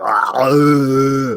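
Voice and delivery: drawn-out guttural noise from the throat. Showing the sound an impression needs: deep throaty sound. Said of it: "that deep throat, like".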